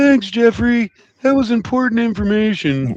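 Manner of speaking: put-on hand puppet voice. Speaking through a puppet during a bit being scored, in a puppet voice. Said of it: "is that a good puppet voice?".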